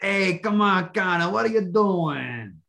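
Italian mobster voice. Urging another speaker to try the impression: Italian mobster voice. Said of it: "Have you gotten the Italian mobster down yet?".

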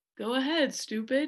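condescending, patronizing, belittling, talking-down tone. Explaining how a rude remark comes across: mock condescending tone. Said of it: "in that tone of voice of like".

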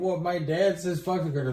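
put-on voice of a small child. Joking about a bit, acting out a kid talking: imitating a kid. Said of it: "Just be like a kid being like".

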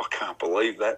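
quiet whispering. Retelling what they whispered to Kel while standing next to him; whispering. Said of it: "I whispered to Kel".

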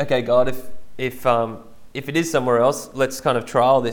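plain

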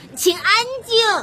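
loud, high-pitched yell. Surrounded by reporters firing questions, the narrator shouts loudly for quiet. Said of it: "我大声喊道".

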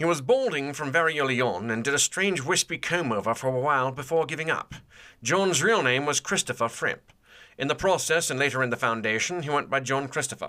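put-on British accent, reading aloud. Reading a few sentences of a biography in his voice, british accent. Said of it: "I'm going to read the next two or three sentences in his voice".

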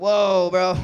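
high, loud, startled whoa. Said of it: "I was just surprised".

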